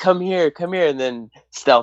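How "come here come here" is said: high-pitched, teasing voice. Joking that Juhani acts like a bad ex-girlfriend: imitating Juhani taunting.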